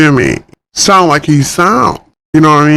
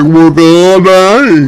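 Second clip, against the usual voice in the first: goofy, silly put-on fool voice; 3 dB louder than usual. Recalling how he voiced a character, quoting him in a goofy fool voice. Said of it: "I had him talking like some goofy fool".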